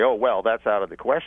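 normal talking voice

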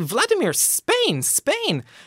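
fretful, anxious, very high, swooping, insistent. Recounting pointing south at Vladimir after a wrong turn, retelling speaking anxiously. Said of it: "sort of, you know, anxiously".

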